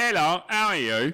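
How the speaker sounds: high, exaggerated, overdone Cockney accent. Demonstrating the voice when asked to, over-exaggerated cockney voice. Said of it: "it's an over exaggerated Cockney voice".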